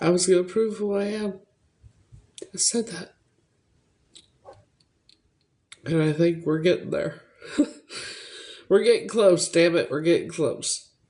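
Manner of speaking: holding back tears, voice near crying. Speaker who has been fighting tears keeps talking: on the verge of tears. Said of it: "Now I want to cry again".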